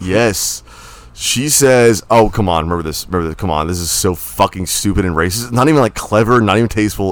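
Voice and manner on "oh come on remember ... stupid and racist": ordinary talk, nothing marked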